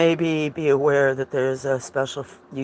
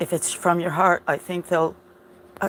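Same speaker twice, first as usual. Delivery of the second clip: shaky, trembling voice; 4 semitones higher than usual. Speaking to viewers while wanting to read their comments, shaky. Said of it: "sorry, I'm shaking".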